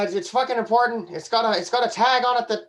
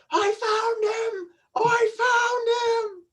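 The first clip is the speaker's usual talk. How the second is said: very high, very slow, drawn-out top-of-the-lungs scream; 12 semitones higher than usual. Calling out while being lifted onto a shoulder: screaming at the top of lungs. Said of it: "starting yelling at the scream at the top of my lungs".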